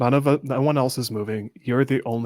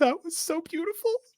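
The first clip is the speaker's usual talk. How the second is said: very high-pitched, jokingly tearful sniffle. Showing Ham how to deliver the reaction line: joking sniffle. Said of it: "you can hear Ham jokingly sniffle".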